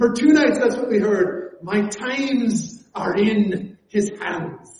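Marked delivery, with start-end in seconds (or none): 1.6-4.8 put-on slow, deliberate, drawn-out Scottish accent. Quoting a pastor's repeated sermon verse: Alistair Begg Scottish accent. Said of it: "this great Scottish accent that he brought it out with".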